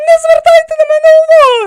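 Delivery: very high, loud, chirpy bird-like twitter. A woman looks up from her meal at two men; chirping. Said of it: "процвірінькала вона".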